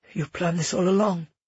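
ordinary delivery

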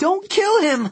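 very high, shrill, pleading cry. Narrator reads Meg crying out to the other campers, shrill. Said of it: "Meg's voice was shrill".

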